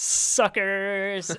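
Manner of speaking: sneering, loud, high, villainous taunting voice. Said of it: "he's like".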